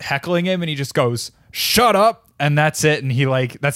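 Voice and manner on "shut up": mock deadpan, matter-of-fact, very high-pitched. Retelling a comic answering a heckler on stage: imitating Rudy Ray Moore's matter-of-fact shut up. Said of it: "the most matter-of-fact "shut up" you've ever heard".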